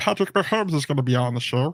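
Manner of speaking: croaky frog-like voice. Announcing a guest on the show, the speaker does a Patrick Mahomes frog voice. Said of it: "that's the frog voice".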